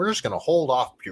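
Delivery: ordinary talk, nothing marked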